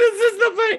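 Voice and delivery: very high, loud, laughing through the words. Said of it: "Let me tell you why I'm laughing".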